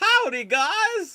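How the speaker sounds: goofy belting, very high and very loud. Retelling a deleted scene from Terminator three: goofy Arnold voice. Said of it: "this goofy voice".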